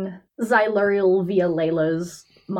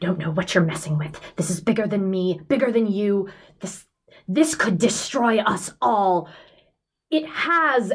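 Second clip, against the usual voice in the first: stammering character voice. Game narrator voicing Xyluriel's reply; Xyluriel stuttering and stammering. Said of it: "stuttering and stammering this whole way".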